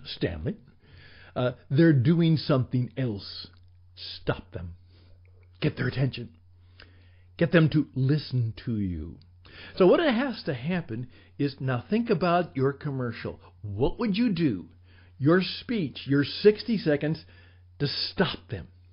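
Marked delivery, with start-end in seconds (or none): 0.0-9.2 clear, put-on British accent. Quoting a friend who taught at the BBC: British accent. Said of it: "he said that with a British accent".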